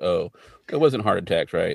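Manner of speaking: ordinary delivery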